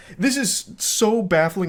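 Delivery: voice cracking mid-word. Reacting to a man's baffling text messages: voice cracking. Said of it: "it's making my voice crack".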